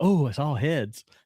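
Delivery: mock thrilled, high, drawn-out, all worked up. Retelling a character's line: imitating an excited voice. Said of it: "He's all excited".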